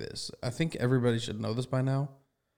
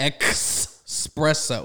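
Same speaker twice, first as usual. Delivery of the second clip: mocking "expresso" pronunciation, louder; 3 semitones higher, 5 dB louder than usual. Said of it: "no X".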